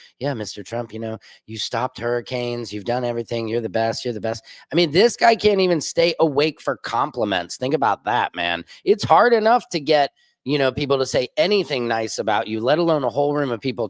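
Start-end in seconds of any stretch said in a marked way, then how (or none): 0.2-4.4 low, flat, droning, one-note monotone. Mocking people in meetings paying compliments: imitating a monotone voice. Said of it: "it's all monotone".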